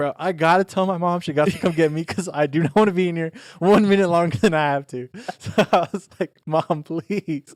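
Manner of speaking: loud, high-pitched, exasperated, fed-up voice.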